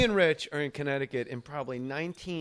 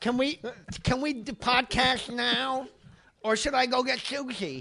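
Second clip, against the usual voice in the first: mocking put-on lisp, higher pitch; 10 semitones higher than usual. Imitating a co-host's text message with a mocking lisp. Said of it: "enough with the lisp".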